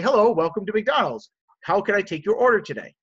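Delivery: courteous, very polite tone. Acting out a drive-thru worker greeting a customer: imitating a polite greeting. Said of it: "They say it very polite".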